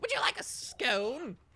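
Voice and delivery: shrill, very high-pitched, very loud halfling voice. Voicing a portly halfling offering a scone: Nutmeg voice. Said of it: "And he goes".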